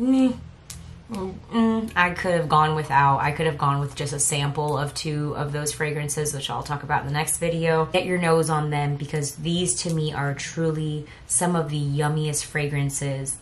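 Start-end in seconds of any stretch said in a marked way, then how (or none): 0.0-3.2 unimpressed, indifferent tone. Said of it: "two that were like".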